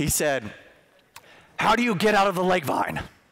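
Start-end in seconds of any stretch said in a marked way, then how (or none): 1.6-3.0 strained, high, voice-straining coach voice. Act out your wrestling coach addressing the team on the mat, in a voice-straining Coach Kerr impression. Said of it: "if I keep doing that, I'm gonna lose my voice".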